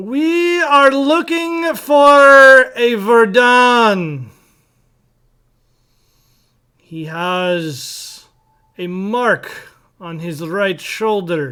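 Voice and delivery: very loud booming voice. A game narrator voices an unseen figure calling out to the players: loud booming voice. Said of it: "you hear a loud, booming voice".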